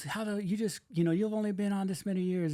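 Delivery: put-on angry yelling. Retelling what a man said after slamming the trailer door, retelling an angry yell. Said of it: ""Who are you yelling at?"".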